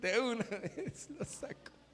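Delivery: high, slow speech while laughing through words.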